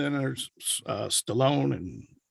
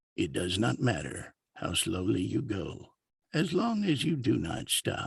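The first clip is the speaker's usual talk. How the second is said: put-on older, aged-sounding narrator voice; 4 semitones lower than usual. Describing possible narration work, demonstrating an older voice. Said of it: "an older voice that sounds like this".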